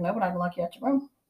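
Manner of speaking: put-on calm tone. Speaker retells her own reply during an argument over dishes, retelling a calm reply. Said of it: "But I was like calm about it".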